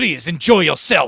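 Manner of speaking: put-on furious tone. Imitating a movie's castle host who is pissed at everybody: imitating a pissed-off man. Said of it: "He's so pissed at everybody".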